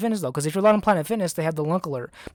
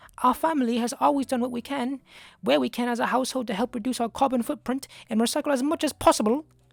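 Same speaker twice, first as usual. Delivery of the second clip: put-on English accent, pitched up; 6 semitones higher than usual. Reading a woman's quote from a news story aloud, in an English accent. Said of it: "should I read this in a in an English accent?".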